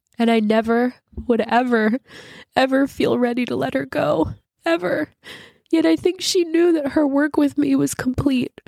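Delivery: crying while speaking. Reading aloud a piece about missing her pet: crying while speaking. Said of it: "I'm crying as I'm speaking it".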